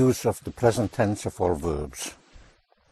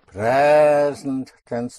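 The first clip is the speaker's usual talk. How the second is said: slow, PRES in present stressed louder. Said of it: "For the present tense".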